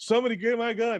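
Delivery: very high-pitched, shrill, acted-out yell. Telling a story, the speaker quotes a man running to the porta potty, retelling a yell. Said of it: "the motherfucker just yells".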